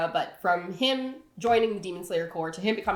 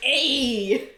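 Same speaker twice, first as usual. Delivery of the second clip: put-on loud, high-pitched New Jersey accent. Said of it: "Tanjiro from Jersey?".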